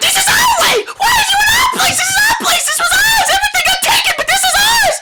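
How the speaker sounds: very high, shrill, screeching creature voice, shouting. A game master voices a creature in a screaming match with the players, screaming. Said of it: "continues its screaming match with you".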